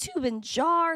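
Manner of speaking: cracked voice breaking mid-word. Greeting viewers by name one morning, the speaker's voice cracks. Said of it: "My voice just cracked".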